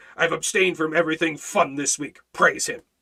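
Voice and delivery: mock grumpy legalistic voice. The speaker acts out what a legalist says, in a mock legalistic grumpy voice. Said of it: "the legalistic grumpy voice".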